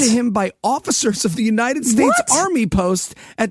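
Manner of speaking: normal talking voice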